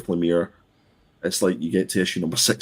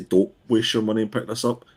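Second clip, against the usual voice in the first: normal talking voice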